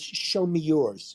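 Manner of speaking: mock superior, belittling, condescending tone. Retelling what a woman said while talking down to her, imitating a condescending tone. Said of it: "just in that tone".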